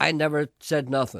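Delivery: plain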